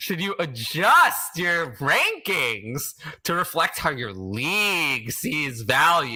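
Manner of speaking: high, scornful, contemptuous, disdainful reading. Speaker reads out a question someone sent in, in a contemptuous tone. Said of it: "You hear the contempt in my voice?".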